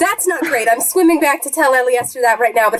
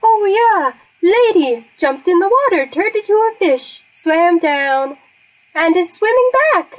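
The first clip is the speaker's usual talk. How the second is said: high, slow talking-fish voice; 5 semitones higher than usual. Game master voices a fish answering the player about the druid, talking fish voice. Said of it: "your fish".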